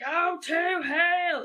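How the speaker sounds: very high-pitched, shrill, furious-sounding yell. Repeating the documentary line again, imitating Mark Byers yelling. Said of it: "she knows it word for word".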